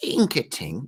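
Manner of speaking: put-on tiny, little elderly woman voice. The narrator voices a character speaking aloud: little old halfling lady voice. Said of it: "in the voice of a little old halfling lady".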